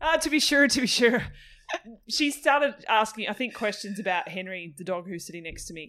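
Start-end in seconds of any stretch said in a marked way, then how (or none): 0.2-1.2 loud, high, mock Irish accent. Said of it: "that sounds Irish".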